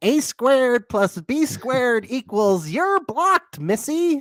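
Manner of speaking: very high, slow, drawn-out put-on voice. Retelling what someone said on seeing a video: Shuby voice. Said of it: "we're doing our Shuby voice".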